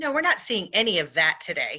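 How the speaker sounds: sarcasm laid on very thick, heavy and swooping. Commenting on whether people ignore contrary evidence today: heavy sarcasm. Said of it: "with all the sarcasm I can muster".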